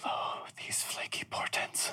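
hushed, whispered mutter under the breath. In a role-play scene, after witnessing something, muttering under the breath. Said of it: "And then under my breath".

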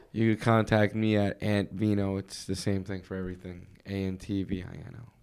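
soft, flat, uninterested voice. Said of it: "You sound so enthusiastic saying this".

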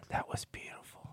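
very soft, hushed, breathy whisper. Retelling what an elderly woman said as he walked by: imitating a whisper. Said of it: "she whispered it".

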